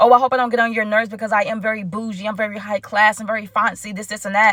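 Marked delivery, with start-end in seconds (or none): none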